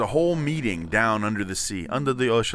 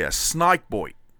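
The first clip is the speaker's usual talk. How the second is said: put-on Australian accent, "snake" said as "snike". Speaker teaching how to do an Australian accent: Australian accent. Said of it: "I will tell you how to do an Australian accent".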